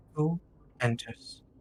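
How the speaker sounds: cold, icy, calm, composed, soft voice. The narrator voices a shadowy figure as someone enters, cold, calm voice. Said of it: "You hear a cold, calm voice".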